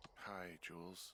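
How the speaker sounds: sounding tired and weary. Picking up the radio to answer the other caller in a scene: tired voice. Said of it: "you sound tired".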